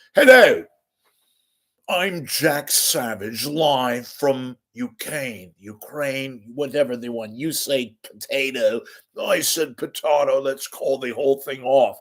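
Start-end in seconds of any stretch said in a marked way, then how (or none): 0.2-7.4 put-on dignified English news-correspondent accent. Pretending to be a foreign correspondent reporting live: put-on english accent. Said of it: "I'm talking like this 'cause I'm not even English".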